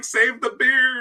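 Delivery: put-on very high, desperate, frantic shriek. Retelling watching a stream at breakfast in a restaurant: imitating own screaming.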